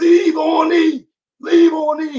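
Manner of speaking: put-on hoarse preacher yell, very high, very slow. Recalling hearing a motivational speaker long ago, imitating Eric Thomas's hoarse yell. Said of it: "he's yelling, oh, oh, in your face, voice all hoarse".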